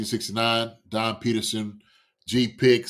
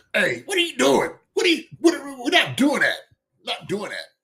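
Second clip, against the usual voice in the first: put-on voice, pitched very high with swoops; 13 semitones higher than usual. Doing a little impression of someone: Pat impression. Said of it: "So that's my little impression of Pat".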